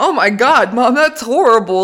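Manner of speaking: speech through laughter. Retelling her reaction to an ugly gift: imitating herself laughing while talking. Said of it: "like, laughing".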